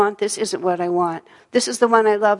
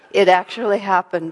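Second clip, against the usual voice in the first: ordinary talk, nothing marked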